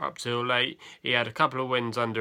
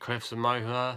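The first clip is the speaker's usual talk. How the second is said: ordinary talk, nothing marked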